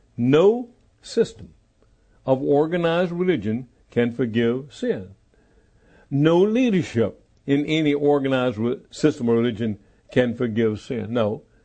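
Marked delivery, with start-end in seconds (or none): 0.2-5.2 slow, measured, deliberate, word-by-word delivery. Repeating a point about religion to listeners, slow and deliberate. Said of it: "Let me say that slowly".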